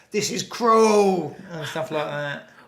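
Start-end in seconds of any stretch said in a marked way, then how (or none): 0.2-1.4 very loud, high-pitched shouted outburst. Retelling what the passenger said about the elephants: imitating someone shouting. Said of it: "then you just shout".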